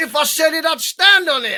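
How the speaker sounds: high, street-sounding put-on American Brooklyn accent. Retelling a boxer's press conference line: imitating Fabio Wardley going American. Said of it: "he got all American".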